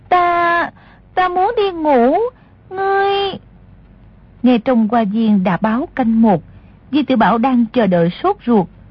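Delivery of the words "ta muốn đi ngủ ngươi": high, very slow, coy, pouting, coquettish whine. Narrating a princess's line as she speaks at night, coquettish whine. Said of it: "nũng nịu nói".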